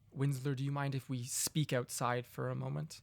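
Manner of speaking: soft, very quiet, hushed, under-the-breath voice. A game master voices a character addressing Winsler: very quiet. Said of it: "very quietly say to you".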